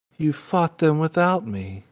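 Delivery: downcast, crestfallen voice. Voicing a tiger who finds his friend fought without him: sad and dejected. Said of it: "he gets really sad and upset and dejected".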